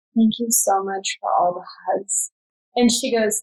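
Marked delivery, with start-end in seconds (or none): 0.2-2.3 whispered voice. Retelling thanking someone during labor, whispering. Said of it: "and I whisper to her".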